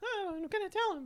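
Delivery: very high, squeaky put-on voice. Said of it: "he has, like, a high voice".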